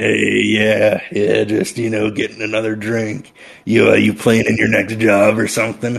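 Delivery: insectoid voice with hissing and mandible clacking. A worker at a bar greets a buddy and answers about their next job, in an insectoid, mandible-clacking voice. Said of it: "slow anchor lifter like hisses down at the table with with more clacking of, of, of short mandible against long".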